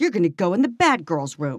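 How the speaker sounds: acted-out stern, punishing, scolding tone. Imagining how he said it to a girl, in a mock-punitive tone. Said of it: "Then he made it sound very punitive".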